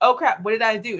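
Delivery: normal talking voice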